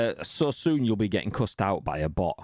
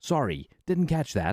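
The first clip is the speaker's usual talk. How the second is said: American AI voice-assistant voice, pitched up; 6 semitones higher than usual. Retelling a voice command to the game's ai, answering in americanized ai voice. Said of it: "fucking Americanized A I voice goes".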